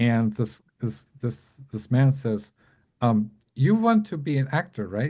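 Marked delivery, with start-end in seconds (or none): 3.5-5.1 put-on heavy German accent, laid on thick. Retelling what a guest asked a struggling caterer: Billy Wilder thick German accent. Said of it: "a thick German accent".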